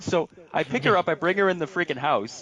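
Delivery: ordinary delivery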